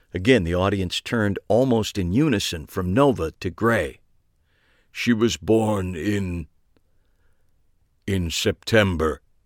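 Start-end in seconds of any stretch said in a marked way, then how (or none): 4.9-9.2 slow, flat, toneless level monotone. Narrator reads a man answering a woman's question before an audience, in a flat monotone. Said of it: "he said in a flat monotone".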